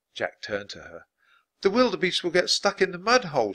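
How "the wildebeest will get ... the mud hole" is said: high-pitched cry, crying out. Annie, watching the wildebeest swim the river, calls to Jack, crying out. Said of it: "she cried".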